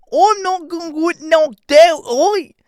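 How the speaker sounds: shrill, very high, loud, stretched-out, slow voice. Retelling what a fighter said during the fight: Ian Garry impression. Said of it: "my impersonation is spot on".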